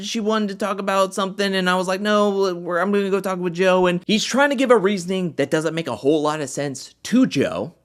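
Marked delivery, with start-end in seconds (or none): 0.0-3.9 high, airy, light offhand casual tone. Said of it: "tries to play it off like".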